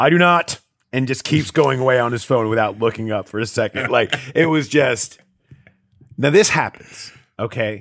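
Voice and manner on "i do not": play-acted curt, aggressive, raised, high brush-off tone. Retelling how a player brushed off a question: imitating Trey Hendrickson saying it aggressively. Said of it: "very, let's just say, aggressively just says".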